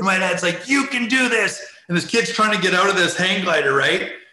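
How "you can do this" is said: put-on high, raised screaming. Retelling his dad urging a kid stuck on a hang glider: retelling dad screaming in a face. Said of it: "He's like screaming in the guy's face".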